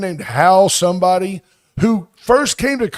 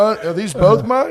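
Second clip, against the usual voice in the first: normal talking voice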